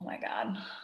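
unvoiced, very soft whisper.

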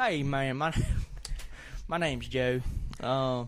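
broad, slow southern drawl, laid on thick. Asked to reenact his first introduction, he replays it in a thick southern accent. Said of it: "reenact how you like shook my hand ... in your southern accent".

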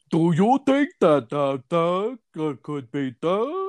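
mocking, high-pitched host voice. Mocking a clickbait video host's voice, imitating the host. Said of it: "some guy who's like".

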